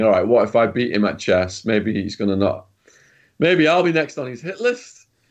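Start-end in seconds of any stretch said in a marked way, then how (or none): none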